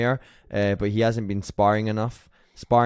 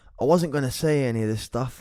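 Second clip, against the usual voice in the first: put-on speaking in an English accent; 3 semitones higher than usual. Asked to read the quote in English, voicing Bisping: Bisping English accent impression. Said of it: "Bisping says in an English accent".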